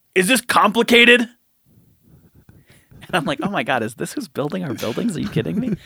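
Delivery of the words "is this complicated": rough workman's gruffest possible voice. Retelling a foreman's question to the speaker, in the gruffest voice. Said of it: "in the gruffest voice".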